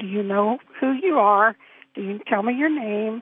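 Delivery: ordinary talk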